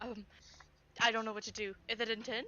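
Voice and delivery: put-on frantic whisper. Describing Kai with hands on someone's face, Kai's panicked whisper, put on. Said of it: "Kai's, like, panic whispering".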